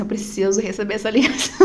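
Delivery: ordinary delivery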